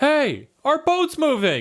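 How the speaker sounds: very high-pitched swooping shout. Voicing a boat owner who notices the boat leaving the pier: yelling. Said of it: "you hear someone yell from behind you".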